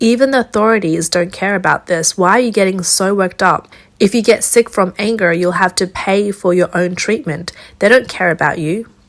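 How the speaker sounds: normal talking voice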